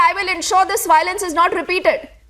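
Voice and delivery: ordinary talk, nothing marked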